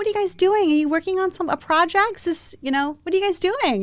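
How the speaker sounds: mock, very high, condescending talking-down tone. Retelling a gentleman's question at a coffee shop: imitating a condescending tone. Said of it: "tone of your voice just how condescending".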